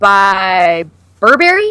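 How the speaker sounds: Burberry said with a rising, question-like tune. Retelling an actor's answer in an interview: imitating a questioning rise. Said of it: "a question".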